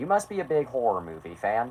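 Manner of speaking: sarcastic jab with wide-ranging pitch.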